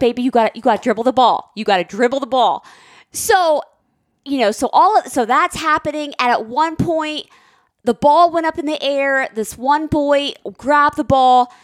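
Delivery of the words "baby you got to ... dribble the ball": mock gentle, sweet, coaxing tone. Retelling how the referee spoke to a player: imitating a sweet referee. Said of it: "and she was so sweet".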